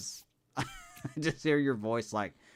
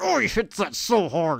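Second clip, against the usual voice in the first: very loud, high gruntled holler; 9 semitones higher, 8 dB louder than usual. Imitating the other player's home-run call: imitating a gruntled voice. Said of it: "go into that gruntled voice where you're like".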